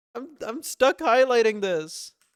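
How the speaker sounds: fast, flustered, frantic panicked blurt. Stuck highlighting text while coding, speaking in a panic. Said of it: "I'm panicking".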